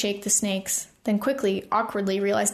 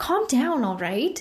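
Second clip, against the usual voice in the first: insistent, firm, demanding tone; 3 semitones higher than usual. A man tells his friends, all arguing at once, to settle: demanding. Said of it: "he demanded of his friends".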